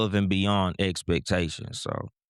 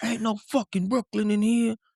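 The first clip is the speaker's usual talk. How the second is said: play-acted angry voice, pitched very high. Retelling how the gangster crowd reacted to a Brooklyn shout-out: imitating an angry heckler.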